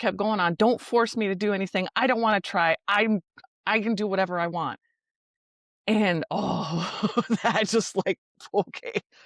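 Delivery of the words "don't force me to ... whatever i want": put-on yelling, faster pace. Retelling what a woman shouted when asked to care for her dog, imitating her yelling. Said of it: "She's literally yelling".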